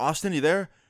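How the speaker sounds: put-on worried voice. Retelling a phone call from the Airbnb owner: imitating someone sounding worried. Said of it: "he sounds really, like, worried".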